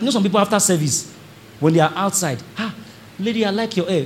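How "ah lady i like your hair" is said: usual speaking voice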